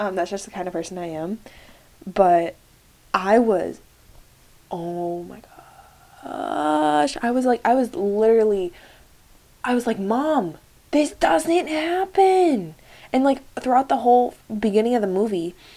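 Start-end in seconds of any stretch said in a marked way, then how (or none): 10.0-12.7 very high, very slow, drawn-out tearful bawling wail. Retelling watching a movie with mom: imitating crying and screaming. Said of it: "crying, bawling my eyes out, uh, screaming".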